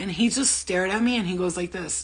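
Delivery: ordinary talk, nothing marked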